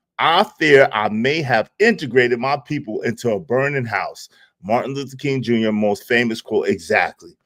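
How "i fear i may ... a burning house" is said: normal talking voice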